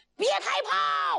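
high, slow, hurried panicked shout.

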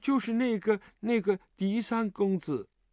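meek, timid. Intimidated by a pointed question, naming the person asked about, timidly. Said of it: "胆怯地说".

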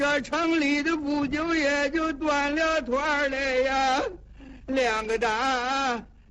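high, slow, tearful street cry. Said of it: "哭声哭韵的了".

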